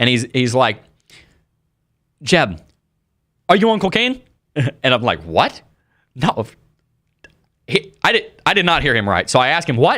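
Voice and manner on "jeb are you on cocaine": put-on thick, laid-on Caribbean accent, pitched up. Retelling a stranger who approached him with a question, the speaker imitates the man's accent. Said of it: "he's got this real".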